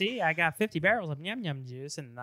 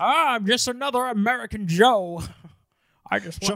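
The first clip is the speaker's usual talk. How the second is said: heavy Scottish accent, loud and pitched up; 6 semitones higher, 7 dB louder than usual. Imitating Sean Connery playing an American in The Untouchables: Sean Connery voice. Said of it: "that Ewok who's supposed to be Sean Connery".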